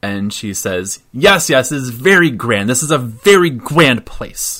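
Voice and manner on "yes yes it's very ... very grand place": very enthusiastic, eager voice. A woman gestures around as she speaks, very enthusiastic. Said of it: "very like enthusiastically".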